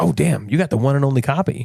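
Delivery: ordinary talk, nothing marked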